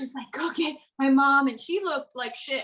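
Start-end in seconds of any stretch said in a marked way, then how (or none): 0.3-1.5 loud, acted desperate voice, on the verge of crying. Retelling a stung friend almost in tears asking for her mom: imitating someone almost in tears. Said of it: "she was literally almost in tears".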